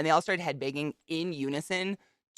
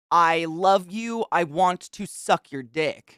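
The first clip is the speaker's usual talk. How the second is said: top-of-the-lungs, full-lungs screaming yell; 4 dB louder than usual. Telling a story about a concert crowd, retelling a girl's scream. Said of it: "at the top of some girl's lungs".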